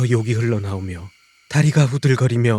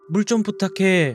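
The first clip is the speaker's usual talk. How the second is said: slightly louder, high, raised calling voice. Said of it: "살짝 더 큰 소리를 질렀습니다".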